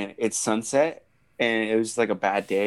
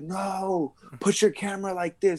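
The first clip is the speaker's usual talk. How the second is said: mock very high shout with a long, stretched "no"; 10 semitones higher than usual. Retelling instructions to a friend during a storm: imitating own past yelling. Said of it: "I'm yelling at him".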